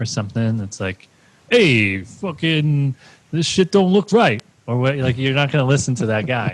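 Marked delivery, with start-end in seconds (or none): 1.5-4.4 put-on unpolished New York street accent, drawn out. Imitating a doctor with a heavy New York accent: put-on New York accent. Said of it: "talking about the New York accent".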